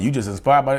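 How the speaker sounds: ordinary talk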